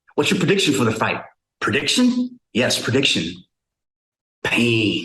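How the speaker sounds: tough-guy boxer voice, trash-talk delivery. Asked for your best Rocky, offer the one you are better at, a Mr. T impersonation. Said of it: "Give me your best Rocky impersonation".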